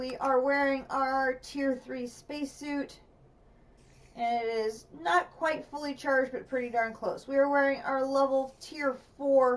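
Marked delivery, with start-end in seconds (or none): none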